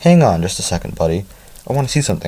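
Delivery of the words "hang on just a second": plain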